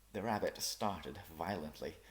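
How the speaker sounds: plain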